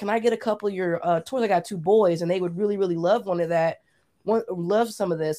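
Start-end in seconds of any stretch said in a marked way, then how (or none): none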